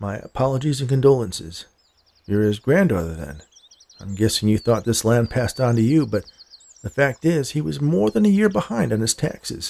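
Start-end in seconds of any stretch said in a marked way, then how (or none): none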